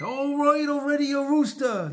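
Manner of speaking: usual speaking voice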